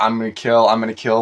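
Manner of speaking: put-on robotic machine voice. Imitating a film character's line: robotic Terminator voice. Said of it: "more, like, robotic".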